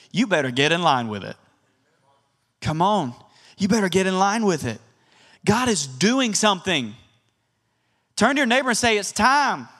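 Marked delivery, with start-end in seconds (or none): 9.0-9.6 sincere, earnest Southern accent. Telling the congregation what to say to a neighbor: southern accent. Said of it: "with a Southern accent like I did".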